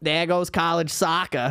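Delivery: put-on Boston accent. Retelling a film scene's line after a kneecap shooting, imitating a Boston accent. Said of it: "the most Boston sent".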